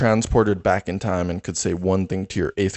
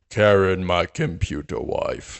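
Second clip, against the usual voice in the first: very slow, drawn-out cartoon voice. Performing a character impression for a friend, speaking as that character to a cartoon computer wife, in a plankton impression. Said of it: "my Plankton impression".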